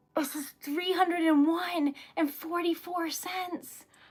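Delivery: voice trembling and shaking with excitement. Reading out a surprise donation amount: shaking with excitement. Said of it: "I'm shaking".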